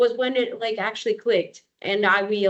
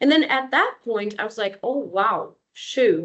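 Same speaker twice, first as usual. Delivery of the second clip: ordinary talk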